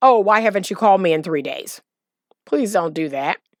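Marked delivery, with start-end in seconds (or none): 0.0-1.8 blaming, resentful, reproachful, accusatory tone. Showing how not to greet someone who hasn't called: accusatory tone. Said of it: "you're not going to sound accusatory".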